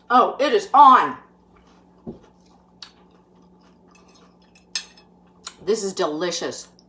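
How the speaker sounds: talking with mouth full. Tasting a dish on camera and reacting to the bite: talking with food in mouth. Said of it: "I won't keep talking on camera with food in my mouth".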